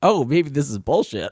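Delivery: abrupt doubtful tone. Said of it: "he was like".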